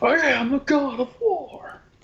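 very high, hammed-up tough-guy voice full of bravado. Joining a joke about a hammy movie role, Mr. Tough Guy voice. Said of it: "I'm trying to do Mr. Tough Guy voice".

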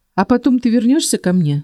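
wary, suspicious tone. He checks with her after she explains her plan, suspicious question. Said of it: "подозрительно уточнил он".

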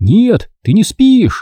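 very high, drawn-out shout. Trying to wake a girl who insists she is asleep, he is yelling even louder. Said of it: "еще громче заорал Турок".

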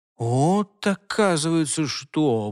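grumbling. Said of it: "буркнул Альфред".

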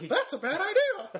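very high, slow, squeaky voice. Retelling a night in a yurt, in a Mickey Mouse voice. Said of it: "Is that Mickey Mouse in our yurt?".

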